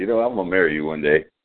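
normal talking voice

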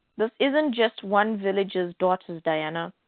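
ordinary delivery

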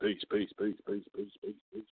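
voice drifting away as if down a hallway.

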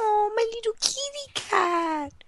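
put-on squeaky, high baby talk with drawn-out "cat". Showing how they talk to a little cat, in high, squealy baby talk. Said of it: "I can do the baby talk ... I get all high and squealy".

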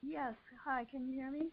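very quiet, faint, barely audible voice. Asking the hosts on a call-in line whether they can hear: very low volume. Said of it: "your volume is very low".

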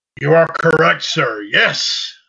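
booming, slow, proclaiming delivery. Doing an impression after agreeing with another speaker: Ed McMahon impression. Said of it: "a little Ed McMahon there".

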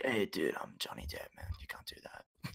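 very quiet, breathy, odd, hushed whisper. Telling a story, imitating how Johnny Depp talked in a quiet Johnny Depp voice. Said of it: "He speaks in the weirdest voice. ... He speaks in the quietest voice".

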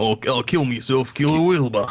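put-on Australian accent. Repeating the other speaker's slip about killing himself: imitating an Australian accent. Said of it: "the Australian accent's terrible".

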